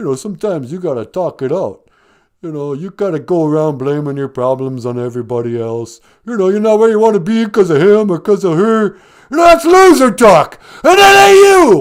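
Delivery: booming high-pitched belting. Playing a caller giving life advice on a podcast: Sylvester Stallone impression. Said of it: "hey, Sylvester Stallone".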